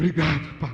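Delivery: grudging tone, seething with suppressed anger underneath. Thanking god as the bible demands, a believer's swear word, said angry. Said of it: "enche o peito de raiva".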